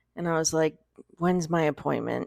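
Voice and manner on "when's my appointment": worn-out, beaten-down, defeated and resigned tone. Retelling calling the dentist's office about an appointment, retelling a defeated tone. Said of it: "You're so defeated".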